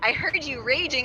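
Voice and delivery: ordinary talk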